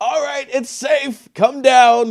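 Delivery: loud high-pitched call. The speaker's character calls down the hole to those below, shouting down a hole. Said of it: "And I sort of shout down the hole".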